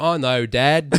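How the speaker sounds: put-on British accent. Retelling a movie scene where Sam Worthington answers his dad: imitating Sam Worthington's British accent. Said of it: "but he's so British".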